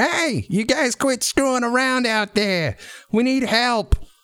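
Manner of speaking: tiny, very high, little high-pitched voice, calling out. The game master voices someone calling from inside the bank: high-pitched little voice. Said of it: "it's a little high-pitched voice".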